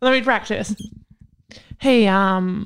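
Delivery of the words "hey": timid, unsure, insecure tone, lower. Practicing telling someone their toilet is clogged, weak, insecure delivery. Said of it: "You sounded weak. You sounded insecure".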